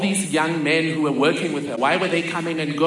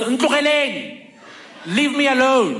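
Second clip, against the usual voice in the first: mock high, swooping yelled voice; 8 semitones higher than usual. Retelling how the mother yelled at a car outside: imitating someone yelling. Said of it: "and yells".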